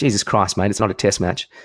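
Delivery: ordinary delivery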